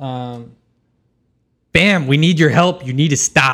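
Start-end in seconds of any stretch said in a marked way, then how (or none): 1.7-3.5 shouting in character, louder. Playing a character who yells at another to stop: yelling in character. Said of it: "I'm gonna yell at him".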